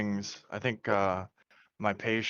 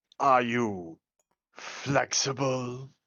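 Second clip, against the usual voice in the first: put-on elderly old man voice; 3 semitones higher than usual. Told to continue with the old man voice while asking a question. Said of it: "continue with the old man voice".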